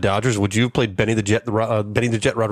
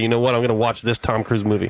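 plain

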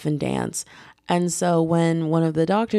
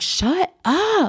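acted, very high, fed-up, done-with-it scream; 12 semitones higher than usual. Retelling finally turning on a man she only tolerated; retelling a scream. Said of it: "I screamed like".

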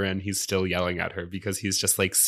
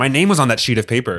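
yelling with higher pitch; 4 semitones higher, 9 dB louder than usual. Recapping a scene, imitating Adam yelling up at Hannah. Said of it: "he just yells up at Hannah".

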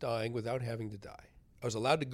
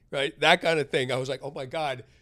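ordinary delivery

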